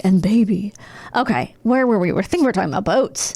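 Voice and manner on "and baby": put-on creepy actor voice. Retelling a creepy TV character's story: imitating James Spader. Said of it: "he's like".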